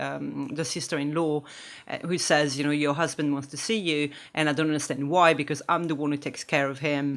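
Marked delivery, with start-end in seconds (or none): none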